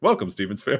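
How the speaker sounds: playful, funny comic character voice. Imitating the chief Tuca's funny welcome to the family. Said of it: "He welcomes them in an incredibly funny way".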